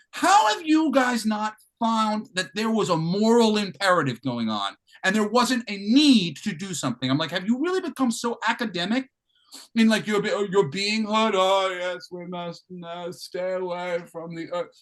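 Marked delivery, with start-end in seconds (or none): none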